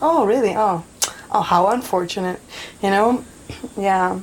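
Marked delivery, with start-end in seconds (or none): none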